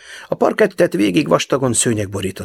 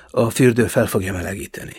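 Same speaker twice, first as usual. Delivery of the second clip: ordinary delivery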